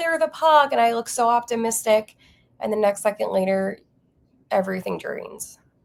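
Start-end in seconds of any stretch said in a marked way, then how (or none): 0.0-0.7 hopeful, pitched-up, loud yelling shout. Retelling recording herself in the final seconds: imitating own yell.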